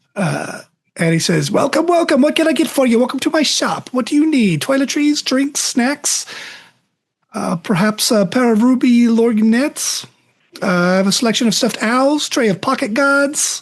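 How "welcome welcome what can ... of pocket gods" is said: pitched-up, high hawker sales patter. Telling a story, the speaker voices a shopkeeper greeting a customer; shopkeeper character voice. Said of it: "He's egg-shaped with tiny arms. Looks like he can barely reach his top shelves. You can't see his legs behind the window into his shop, but you have to assume that they're also small. However, his mou".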